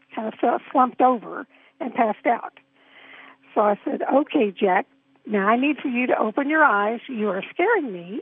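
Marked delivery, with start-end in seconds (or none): none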